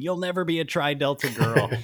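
high, over-the-top shout. Quoting a character's line from a horror film: imitating Frankie shouting. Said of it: "her shouting".

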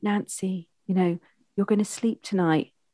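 mild, meek, soft, gentle coaxing voice. Speaker demonstrating the tone to use when putting someone to bed, soft voice. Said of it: "It's the soft voice".

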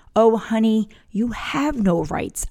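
mock stern, very firm, slow, unbending tone. Retelling leaning in to answer him, speaker repeats her reply in a very firm voice. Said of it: "I looked at him with a very firm voice".

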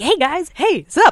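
eager, high, hyped-up, bursting with energy. Describing a fellow comedian, imitating him: energetic Eric Escobar impression. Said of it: "he's just filled with energy".

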